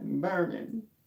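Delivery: high, strained mock cry.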